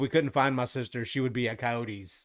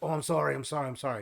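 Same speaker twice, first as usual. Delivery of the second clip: mock drunk voice, much higher pitch; 3 semitones higher than usual. Retelling how a drunk guy kept bumping into people, imitating a drunk apologizing. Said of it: "because he would he would get drunk".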